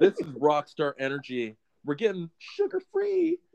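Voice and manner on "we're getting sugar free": very high-pitched, swooping voice shooting up. Announcing going sugar-free to the audience, speaker goes all high-pitched. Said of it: "I went all high-pitched on that one".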